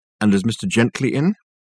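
ordinary delivery

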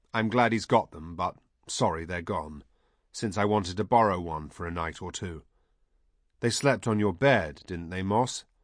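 ordinary delivery

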